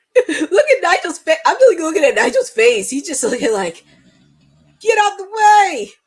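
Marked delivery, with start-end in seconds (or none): 4.8-5.9 put-on pitched-up British accent. Watching and putting words to Nigel's face, in British tone. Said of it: "in British tone".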